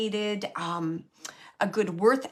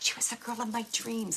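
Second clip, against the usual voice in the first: mock coy, bashful delivery, quieter; 7 dB quieter than usual. Repeating a spirit's words to Jane: imitating a coy, shy way of saying it. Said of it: "he's saying it like that".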